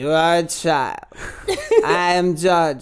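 odd sing-song voice, pitch swooping strangely. Doing a joke impression of Jar Jar Binks: Tommy Wiseau as Jar Jar Binks. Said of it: "Tommy Wiseau is Jar Jar Binks".

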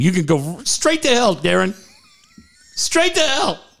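animated yell with big pitch swoops. Acting out an imagined Landon Donovan telling Darren off: imitating Bobby Heenan yelling. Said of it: "gonna be yelling at him like Bobby Heenan".

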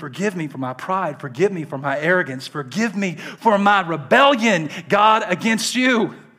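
acted out, loud and passionate, impassioned. Speaker voices what the praying man is saying: acting out a passionate plea. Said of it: "This is the tone".

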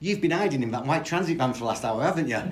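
put-on very loud, high, fairly strong Liverpool accent. Retelling what Joe Mercer's wife said as you arrived at the door, in Nova's fairly strong Scouse accent. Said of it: "in a fairly strong Scouse accent says to us".

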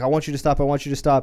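put-on freaked-out, panicky voice. Retelling a scene where the son gets freaked out, acting freaked out. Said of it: "When the son starts getting real freaked out".

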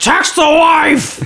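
play-acted sloppy slurred drunk talk, very high. Describing voice-texting while driving drunk, the speaker does mock drunken slurring. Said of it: "you're slurring and you're like".

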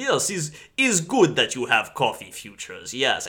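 put-on goofy, hammed-up Russian accent with swooping pitch. Retelling an episode scene with a Godfather parody theme, David Ogden Stiers goofy Russian accent. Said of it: "goofy, over-the-top Russian accent".

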